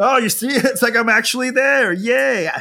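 gleeful pretend cheer.

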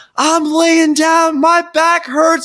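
imitated yelling. Retelling a man yelling back at people working for him, imitating someone yelling. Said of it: "he yells".

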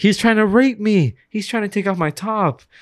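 acted-out old lady voice, high-pitched yelling. Retelling a store incident, imitating the old lady under the trash can yelling. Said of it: "the old lady started yelling".

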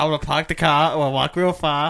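put-on Boston accent. Joking that a soldier from Boston talked like this: imitating a Boston accent. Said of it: "He still had the accent".

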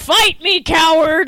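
mild, held-back, small yell. Retelling a scene where Vegeta yells at a house: imitating Vegeta yelling. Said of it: "Vegeta was yelling at the house".

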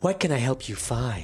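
put-on sexy, seductive librarian voice. Asked for a sexy librarian voice, trying it out for the others: sexy librarian voice. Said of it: "You want a sexy librarian voice?".

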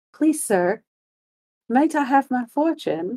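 courteous, proper, polite tone, high-pitched. Acting out a masked teen asking a police officer: imitating a masked teen asking politely. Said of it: "and he's like".

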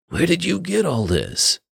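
tired, thick, creaky, heavy-throated voice. A man staring at a revolver in a box asks a question, in a thick, tired voice. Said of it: "Perry asked in a thick, tired voice".

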